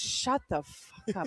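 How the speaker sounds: slow, whispered mutter under the breath. Retelling a comedian silencing a chirping heckler: imitating muttering under breath. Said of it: "Under his breath".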